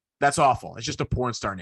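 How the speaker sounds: bone-dry, flat, expressionless deadpan, acted out. Retelling a TV segment about a mascot name: imitating Kornheiser deadpan. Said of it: "Kornheiser just deadpanned".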